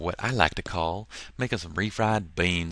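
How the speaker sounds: sudden put-on southern American accent. Tutorial host bringing a PSD file back into Lightroom, southern accent. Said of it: "I don't know why I used a southern accent for that".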